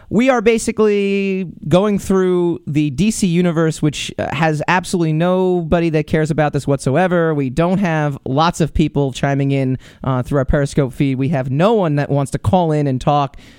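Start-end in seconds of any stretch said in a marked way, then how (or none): none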